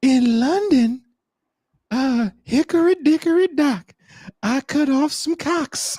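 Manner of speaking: creepy nursery-rhyme voice.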